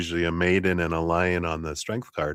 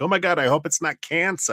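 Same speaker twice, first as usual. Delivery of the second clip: put-on New Jersey accent, very high-pitched; 10 semitones higher than usual. Acting out how people react to a worry, in a New Jersey accent. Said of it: "that's my Jersey accent as much as I can do it".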